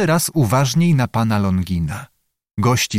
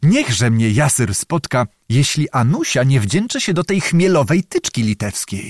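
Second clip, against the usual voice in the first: usual speaking voice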